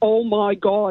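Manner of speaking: put-on thick, strong Derry accent. Retelling hearing a cousin in a pub bathroom: thick Derry accent. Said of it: "in a really thick Derry accent".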